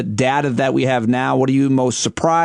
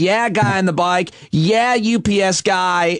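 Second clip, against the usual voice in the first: play-acted cheers, high, very slow, stretched out; 7 semitones higher than usual. Retelling cheering at people from a car in the city, retelling shouting people on. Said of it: "I immediately started shouting people up".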